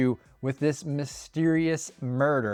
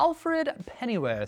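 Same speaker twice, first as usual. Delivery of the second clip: bad, terrible, put-on British butler accent; 10 semitones higher than usual. Naming Batman's butler from the movies: terrible British accent. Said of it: "say it with a kind of terrible British accent".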